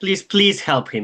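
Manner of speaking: pleading. Voicing a very upset woman begging for help for him, pleading. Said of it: "She's pleading with you".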